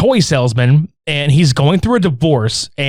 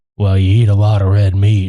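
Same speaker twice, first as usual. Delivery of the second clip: low, very calm, soothing voice. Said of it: "just real, just calm".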